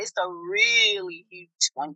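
slow, deliberate, drawn-out delivery.

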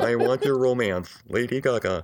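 robotic synthesized speech voice. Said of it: "I can do anybody that way".

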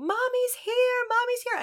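put-on very high, tearful screaming cry. Retelling what she heard her screaming for mommy, imitating her screaming. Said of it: "I hear her screaming".

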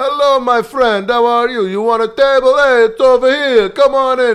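very loud, hearty, booming, high-pitched friendly mafioso-style voice. Retelling how the restaurant owner greets them: imitating owner as friendly mafioso. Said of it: "total, like, you know, s-, mafioso, like, but totally friendly".

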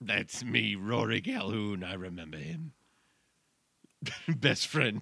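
put-on, easygoing talking-dog voice. In a comedy bit, speaking as a dog to the other speaker: talking dog voice. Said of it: "This voice is very easy to do".

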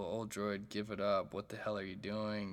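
ordinary delivery

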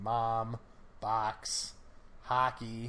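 Michigan open ah vowel in mom, box, hockey. Showing a Michigan accent on mom, box, hockey, open ah for O vowels. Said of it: "It's a complete A vowel for me. ... that's still my Michigan coming through".

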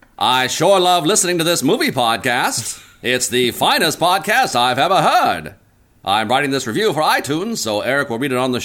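put-on old-timey radio announcer delivery. Improvising a fake itunes podcast review on request: old-timey radio voice. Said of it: "in an old-timey radio voice. Like that?".

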